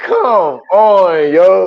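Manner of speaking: high, loud, exasperated groan. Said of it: "I'm like".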